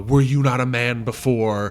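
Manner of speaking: mock condescending, slow, loud, talking-down delivery. Describing how some actresses deliver a Macbeth line: mock-condescending. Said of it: "some actresses do it in a more condescending, like".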